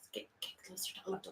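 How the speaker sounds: soft, hushed, calming whisper. Recounting a game scene, the speaker whispered to keep things calm: retelling a whisper. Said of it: "I'm whispering it as a sort of like a way to like keep things calm".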